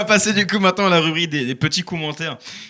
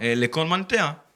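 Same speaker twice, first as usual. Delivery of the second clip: put-on accent of southern France; 4 dB quieter than usual. Hosts joke that things work better with a southern accent; southern french accent. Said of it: "C'était quoi cet accent?".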